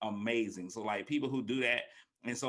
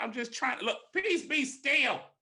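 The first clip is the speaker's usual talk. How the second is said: weary parent voice, pitched up; 13 semitones higher, 4 dB louder than usual. Retelling the storm story, the speaker acts out Jesus answering the disciples: Jesus in a parent voice. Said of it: "he said it in that parent voice".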